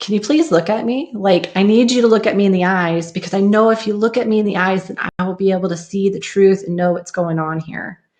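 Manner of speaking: mock begging, earnest, imploring, repeated and insistent. Retelling asking a being to look them in the eyes: imitating own begging. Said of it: "And I begged and I begged".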